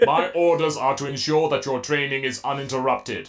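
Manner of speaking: low, mechanical robot-like voice. Narrator reading a story, voicing a voice outside a locked door, robotic voice. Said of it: "he can't do a robotic voice like that".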